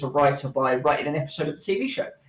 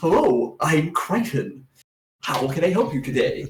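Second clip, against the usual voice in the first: put-on, laid-on, artificial android butler voice. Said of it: "which I've always loved doing the voice of".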